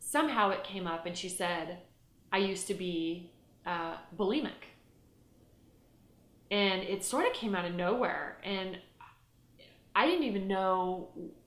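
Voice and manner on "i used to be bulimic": ordinary delivery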